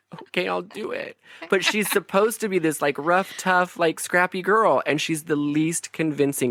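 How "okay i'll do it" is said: acted breathy whisper, on the verge of crying. Mocking an actress's performance as a tough street kid: imitating Claire Danes near tears. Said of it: "always on the verge of crying".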